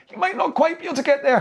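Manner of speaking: high-pitched silly voice. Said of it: "You don't have to make the silly voice".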